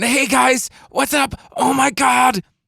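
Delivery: shrill, strained, very high, tense scream. Speaker demonstrating an old habit of screaming into the microphone: tense screaming. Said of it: "screaming into the microphone and falling back into those old habits of getting very tense".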